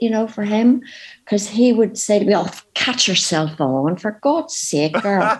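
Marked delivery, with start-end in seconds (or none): 2.3-5.4 Northern Irish Belfast voice. Quoting what her father used to say to her, in a Belfast accent. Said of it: "I can do a pretty good Belfast accent".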